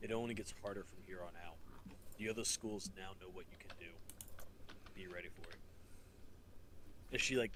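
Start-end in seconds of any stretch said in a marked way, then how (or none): 0.0-5.6 cold, grave, hard, low, dead-serious half-whisper. Voicing a character who leans in and half-whispers a warning: half-whispering, cold and dead serious. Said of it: "and whispers to your ear".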